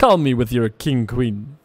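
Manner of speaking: put-on vampire voice. A poker commentator narrates the hand, Dracula-esque voice. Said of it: "that sounded kind of like Dracula-esque".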